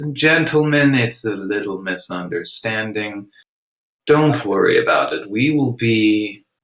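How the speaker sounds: calm, reassuring, slow, soothing, unhurried voice. Voicing a character calming two men with a charm spell: talking slow and soothing. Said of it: "I just start talking slow like this".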